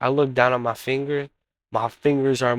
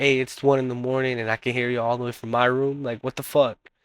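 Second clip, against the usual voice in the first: normal talking voice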